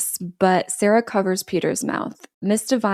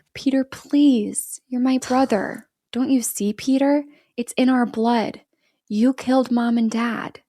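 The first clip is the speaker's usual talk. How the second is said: put-on sweet, childlike little kid voice; 5 semitones higher than usual. Telling a story, the speaker voices Sarah pleading with her brother Peter: Sarah's sweet little kid voice. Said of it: "Sarah switches to her sweet little kid voice and says".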